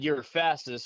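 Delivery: ordinary talk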